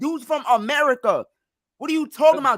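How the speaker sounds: shouted, heated yelling outburst at full heat. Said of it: "why you're yelling about the demographics".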